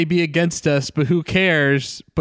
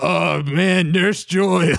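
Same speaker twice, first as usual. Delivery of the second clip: put-on chain-smoker voice. Imitating Brock swooning over Nurse Joy: Brock voice like a chain smoker. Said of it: "he sounds like he's been chain smoking for, like, a decade".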